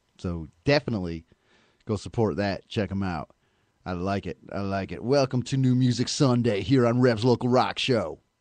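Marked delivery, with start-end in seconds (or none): 5.0-8.2 on-air radio DJ announcer delivery. Announcing the show's segment in a put-on radio voice. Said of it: "I love it when I do my radio voice".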